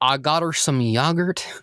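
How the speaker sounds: Southern Texan drawl. Playing a kid explaining his groceries for his ma, sounding like Hank Hill. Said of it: "now I'm just starting to sound like Hank Hill".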